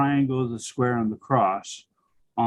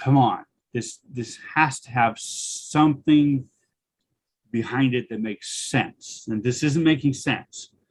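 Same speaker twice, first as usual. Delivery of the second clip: plain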